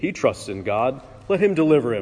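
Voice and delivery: ordinary talk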